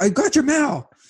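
very high, loud, pissed-off angry shout. Retelling how a man delivering mail showed up pissed off: imitating a pissed-off man. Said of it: "He shows up pissed off".

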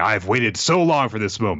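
high scream. Retelling what a character screamed while lunging to attack: imitating someone screaming. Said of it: "she was screaming".

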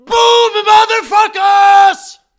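shrill, very loud, very high top-of-the-lungs scream. A speaker re-creates for listeners his shout while watching a match on TV, shouting as loud as possible. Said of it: "jag ska skrika det nu för er också".

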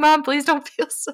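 talking through laughter. Telling a story about her mom's calendar, laughing while talking. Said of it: "I'm sorry I'm laughing".

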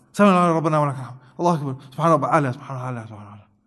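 low mumbled jumble, words run together. Demonstrating how most people say their prayers, mumbled jumble. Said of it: "It's all mumble jumble".

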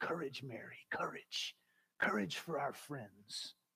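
trembling, quavering, very quiet, shaky whisper. Telling a story, a character faces a huge enemy army, in a shaky whisper. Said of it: "whispers in a shaky voice".

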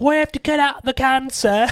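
put-on British accent, pitched very high. Repeating a character's movie line on request: imitating a british accent. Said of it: "do it in the British accent like she did".

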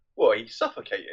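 play-acted petulant sulk, very low voice. Retelling how a man answered people staring at him about the dead cat, mock-sulky. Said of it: "he sort of purses his lips like a sort of sulk".

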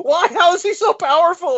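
high-pitched, baffled squeal of disbelief.

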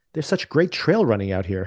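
ordinary delivery

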